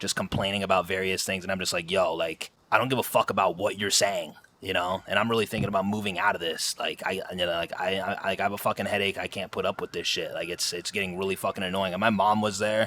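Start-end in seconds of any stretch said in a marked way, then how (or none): none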